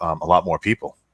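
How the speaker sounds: normal talking voice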